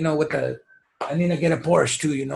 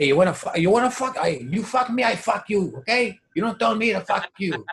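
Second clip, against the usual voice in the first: put-on movie gangster accent, higher; 4 semitones higher than usual. Acting out a pushy come-on line as Scarface. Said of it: "It's Scarface, dude".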